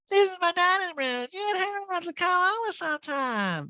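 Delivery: sudden very high, unfamiliar-sounding voice. Retelling a home tour on a show, imitating Erica's high voice. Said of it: "the voice coming out of Erica doesn't even sound like her".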